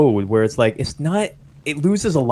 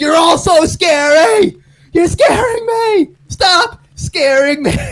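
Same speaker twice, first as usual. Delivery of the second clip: very high, terrified, frightened shrieking scream; 6 dB louder than usual. Showing how someone would just scream in response, a mock-scared scream. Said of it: "just scream like".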